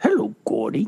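cartoonish voice with an added rasp. Showing the other speaker a voice a fan mentioned: Pennywise voice. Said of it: "He does a creep Clinton one, too, and Pennywise".

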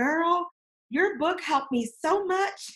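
put-on broad Tennessee accent laid on thick, pitched high. Retelling a male client's phone call about her book, in a thick tennessee accent. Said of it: "thick Tennessee accent".

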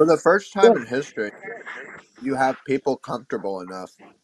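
talking through a mouthful while chewing. Speaking mid-discussion while eating a cookie: talking with mouth full. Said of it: "Sorry, I'm eating a cookie".

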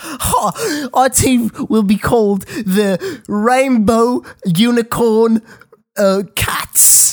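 high, very slow, drawn-out drawl. Retelling what a camp counselor said about team names: pyrocynical impression. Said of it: "pyrocynical impression I've ever heard".

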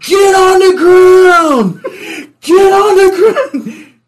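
high, loud, slow screaming. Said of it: "I'm screaming in his ear".

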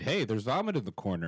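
ordinary delivery

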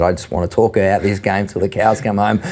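ordinary delivery

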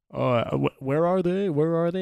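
mocking fake-clueless voice with lifted pitch. Retelling what a trolling teammate said in a ranked game: imitating a troll playing dumb. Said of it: "he clearly knew more about the game than he was letting on".

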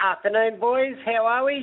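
squeaky, very high helium-balloon-like voice. Greeting the radio hosts on a call: high-pitched voice. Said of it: "Stop sucking on that helium balloon".

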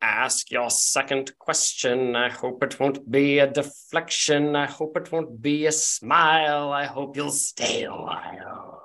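cheap knockoff voice, word smile drawn out. A rock gnome's mouth moves again and it speaks: Walmart Snape voice. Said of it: "Walmart Snape".

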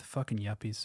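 muttered under the breath. Acting out a great-grandson's remark in an imagined scene: muttered under his breath. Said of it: "just under his breath".

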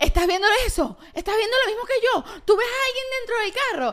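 loud excited amazement. Retelling calling out to Eliu on seeing a driverless car: imitating her own loud call. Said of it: "además así durísimo".

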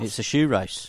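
usual speaking voice

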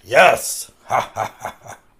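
put-on talk-show sidekick voice with a chuckle. Talking about Star Search, you show the others your Ed McMahon impression. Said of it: "That's my McMahon impression".

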